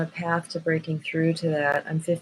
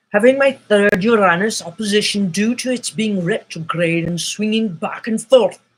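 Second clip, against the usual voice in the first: loud put-on Scottish accent; 4 semitones higher, 6 dB louder than usual. Talking astrology, a line in a Sean Connery Scottish accent. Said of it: "my favorite Scottish accent is James Bond, Sean Connery".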